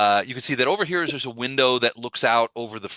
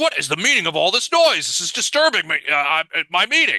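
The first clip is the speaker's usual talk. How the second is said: high, loud, raised official-sounding yell; 6 semitones higher, 5 dB louder than usual. Describing the festival performance, the speaker does the Burgomaster's voice. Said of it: "recognize it as the Burgomaster's voice".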